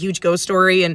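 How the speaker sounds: normal talking voice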